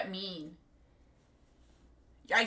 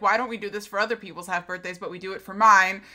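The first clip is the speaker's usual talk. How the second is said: normal talking voice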